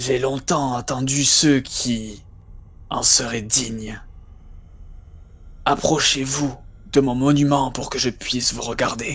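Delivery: hoarse, raspy, rough male voice. Voicing a voice carried by the wind, calling the players closer: raspy male voice. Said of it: "Une voix assez rauque, d'homme".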